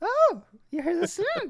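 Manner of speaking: mimicked high-pitched voice. Imitating how a streamer talks to his wife: imitating a high voice. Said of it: "he does that high voice that's".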